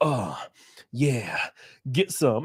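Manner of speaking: mock leering egging-on, very slow and drawn out. Retelling a man's comments as people bent over, imitating him audibly loud. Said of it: "he would do it like kind of like audibly loud".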